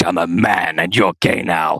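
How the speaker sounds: put-on forced bass, deep man voice, very low. Acting out what he'd normally say back to someone, in a deep man voice. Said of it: "the deep voice that I can't hold for very long".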